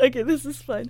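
talking through laughter. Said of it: "I need to catch my breath 'cause I'm laughing".

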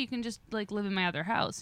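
usual speaking voice

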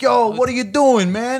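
put-on very high, loud Jersey Italian street accent. Describing Italians who act mob-affiliated, the speaker mimics their talk: Jersey Italian accent. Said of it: "a bunch of Italians that talk like".

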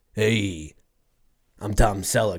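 bad old-time Italian accent, low, slow, drawn out. After your voice just dropped, introduce yourself in a bad Tom Selleck impression, Italian-sounding. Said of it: "That's like if Tom Selleck was an Italian".

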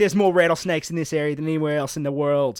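put-on Australian accent, falling apart. Retell what he said about the area where you live, as Steve Irwin, failing Australian accent. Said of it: "Your Australian accent sort of fell apart there".

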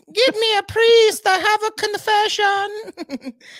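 put-on squeaky, very high little girl voice. Chatting with a friend about The Exorcist, redoing a bit; little girl voice. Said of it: "I should have done more of a little girl voice".

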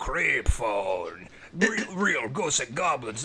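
cartoonish late-night hotline ad voice. Recalling a late-80s creep phone 900-number clip: Strong Bad voice. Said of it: "I don't know why I sound like Strong Bad".

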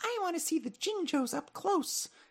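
put-on soft, very high child voice. Guessing why a character wanted to come along, voicing Alphette as little boy gray. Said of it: "that was my little boy gray voice".

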